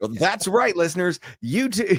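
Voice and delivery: very high-pitched, full-blown commercial announcer voice. Teasing a co-host for slipping into commercial mode, doing a mock commercial announcer. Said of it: "full blown commercial mode".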